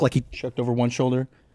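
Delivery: ordinary talk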